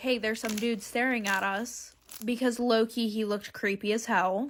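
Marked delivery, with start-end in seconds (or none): 0.0-1.9 whispered voice. Retelling pulling mom aside at the shoe store: imitating a whisper. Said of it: "whispered to her".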